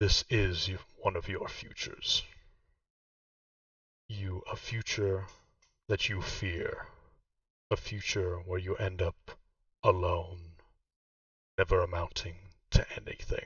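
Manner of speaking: low, deep voice. A cloak approaches and speaks to a wizard, in a deep voice. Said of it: "the cloak says in the same deep voice".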